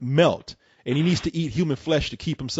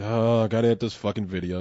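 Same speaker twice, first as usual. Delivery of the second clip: mock-bored voice, lower; 6 semitones lower, 3 dB quieter than usual. Teasing the other person for sounding bored editing a video, imitating a bored voice. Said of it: "You sound like".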